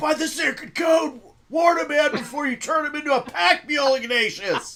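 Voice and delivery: shrill, very high, loud in-character yell. Voicing a character landed on by another, in-character yell. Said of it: "I just yell".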